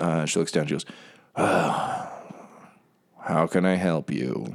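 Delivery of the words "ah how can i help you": put-on slow, bored, apathetic teen drawl. Voicing an orc at a train counter greeting a player: bored orc, teenager in a food court. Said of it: "teenager in a food court, uh, kind of vibe".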